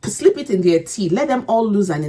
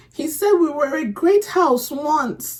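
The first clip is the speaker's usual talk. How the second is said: choked up, near crying, tearful pitched-up voice; 7 semitones higher than usual. Recalling a scene that made them emotional: tearful, crying. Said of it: "why am I crying?".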